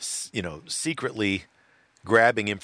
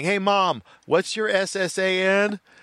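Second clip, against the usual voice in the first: put-on very high, very slow, drawn-out little kid voice; 12 semitones higher, 5 dB louder than usual. Retelling a TV commercial about scams: imitating a little kid. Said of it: "you hear this little kid going".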